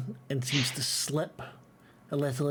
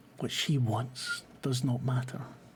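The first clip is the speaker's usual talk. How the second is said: soft half-whisper under the breath. Narrating a man who chokes the listener's character and half-whispers to them: half-whispering. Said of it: "he whispers to you".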